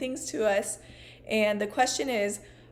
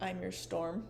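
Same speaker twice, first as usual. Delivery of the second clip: eerie, very hushed, barely-there creepy half-whisper; 2 semitones lower, 9 dB quieter than usual. Recalling a scene from a show's later seasons, creepy half-whisper as Nanny Carey. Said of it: "she like whispers like really creepily".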